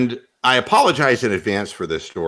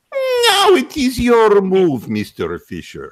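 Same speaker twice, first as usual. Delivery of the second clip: put-on high, swooping, sing-song, laid-on Russian accent; 13 semitones higher, 4 dB louder than usual. Recalling the voice used for any Russian name, addressing Mr. Fisher: Boris Spassky Russian accent. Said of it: "any Russian name that comes up".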